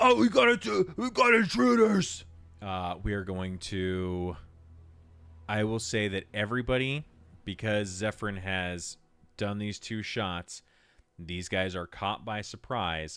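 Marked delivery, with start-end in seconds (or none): 0.0-2.2 shrill, very loud, high, full-throated battle holler. Voicing a berserker struck by two hits: berserker yelling. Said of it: "falls back a little bit and yells".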